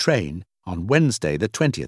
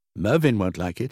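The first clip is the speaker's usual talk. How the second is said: usual speaking voice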